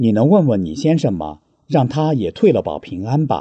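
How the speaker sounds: plain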